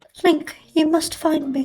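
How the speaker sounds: put-on British accent. Imitating a game character after noting her accent: Zelda in British accent. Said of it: "she speaks with a British accent".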